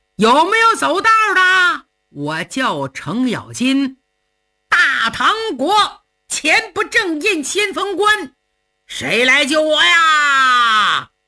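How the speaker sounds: loud, far-carrying calling voice. Cheng Yaojin, cornered by Lei Dabiao, calling for help, shouting up the mountain. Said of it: "所以冲着山上大喊".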